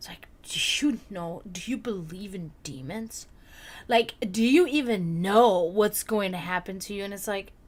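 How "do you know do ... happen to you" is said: superior, patronizing, condescending talking-down tone. Imitating how believers ask about demons: imitating a condescending tone. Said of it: "It's in such a condescending".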